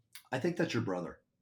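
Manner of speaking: put-on casual, matter-of-fact, offhand delivery. Retelling a father's reply, imitating a nonchalant tone. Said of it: "just as nonchalantly as that?".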